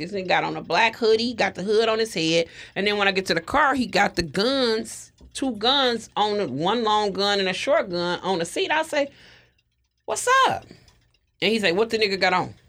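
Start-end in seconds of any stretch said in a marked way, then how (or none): 11.7-12.5 mock rapid-fire talking, faster. Retelling what a man at the car with guns asked, imitating someone talking really fast. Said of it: "He's talking really fast".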